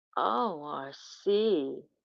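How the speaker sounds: low, sultry, seductive voice. Acting out what she said to r c, in a sultry voice. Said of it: "in a sultry voice. ... Like that".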